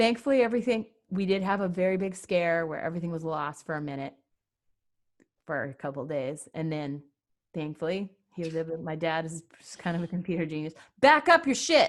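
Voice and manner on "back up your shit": very high, shrill, loud shout. After nearly losing everything, telling listeners: yelling. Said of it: "Sorry for yelling".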